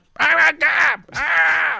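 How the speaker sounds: high, loud garbled screaming shout. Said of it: "it sounded like".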